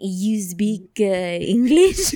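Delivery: English spoken in a put-on French accent. Retelling a stranger asking if they speak English: imitating someone in a French accent. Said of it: "but assume a French accent".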